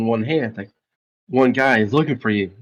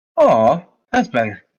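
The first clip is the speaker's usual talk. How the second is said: put-on fancy, high-class accent; 3 dB louder than usual. Retelling what a man said after clearing his throat, in a fancy accent. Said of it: "So like in a fancy accent".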